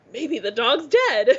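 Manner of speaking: play-acted, oddly happy-sounding delivery. Imitating another speaker's past remark about the dog: imitating someone sounding happy. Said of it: "you sounded so happy".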